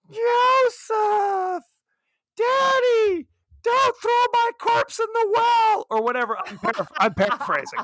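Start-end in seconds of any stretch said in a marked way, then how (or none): 0.2-5.9 put-on very high, slow, eerie, childlike ghostly voice. Retelling a voice heard on a seance recording, in a crazy ghostly voice. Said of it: "it's this crazy voice".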